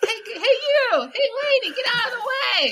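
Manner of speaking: very high, loud yelling shout. Showing own new york edge, imitating own yell at strangers. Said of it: "shouting at random people".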